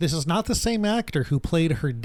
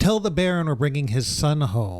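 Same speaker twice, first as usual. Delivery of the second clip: normal talking voice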